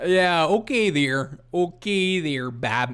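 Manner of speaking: not-so-good put-on Canadian accent. Reacting to clips of a Canadian man: bad Canadian accent. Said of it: "I don't have a very good Canadian accent".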